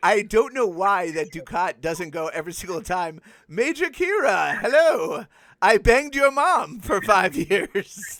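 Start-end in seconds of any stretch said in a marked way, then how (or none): 3.5-8.2 raised, slow, deliberate speech. Speaker addresses Major Kira, doing a Dukat impression. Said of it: "I was just doing my Ducat impression".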